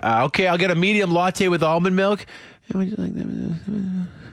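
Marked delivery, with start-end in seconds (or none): 2.7-4.1 soft, slow murmur. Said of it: "it's just soft-spoken people".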